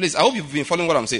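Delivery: quick, rattled-off speech.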